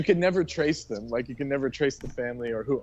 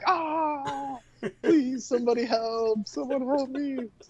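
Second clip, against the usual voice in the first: play-acted distant, very slow, high, ah stretched; 12 semitones higher than usual. Retelling hearing a beaten man from the back room: imitating a man screaming for help. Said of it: "you can just hear him in the back".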